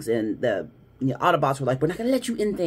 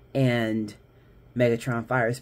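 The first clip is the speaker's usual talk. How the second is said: normal talking voice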